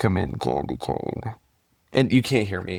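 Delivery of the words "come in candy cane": slow, hushed, whispered trucker character voice. Talking about a movie, quoting its trucker in a trucker character voice. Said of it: "I'm gonna do the voice".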